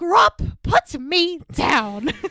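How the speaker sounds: very slow, stern, strict scolding mom voice. Retelling a Harry Potter scene, quoting Hermione to the giant, in Hermione's mom voice. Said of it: "she gives him the mom voice".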